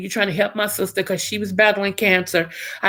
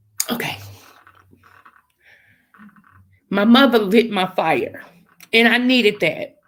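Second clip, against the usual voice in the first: trying not to cry, holding back tears. Telling listeners about her diagnosis and her mother, holding back tears. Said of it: "I'm gonna try to say this without crying".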